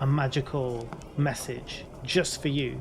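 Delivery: normal talking voice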